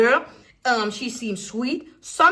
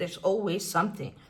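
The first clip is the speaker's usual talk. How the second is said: mock muttering, lower and quieter; 4 semitones lower, 9 dB quieter than usual. Retelling what he said after getting up: imitating a mumble under breath. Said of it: "he mumbled on it under his breath".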